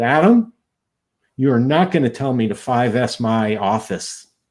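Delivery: mock displeased, put-out, slow, very unhappy tone. Retelling what a gentleman said on coming up: imitating a very unhappy voice. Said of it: "in a very unhappy voice".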